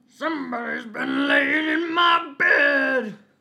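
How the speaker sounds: very loud, rough, gruff bear voice, bed drawn out. Reading a story aloud, voicing the great huge bear: great rough gruff bear voice. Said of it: "in his great rough gruff voice".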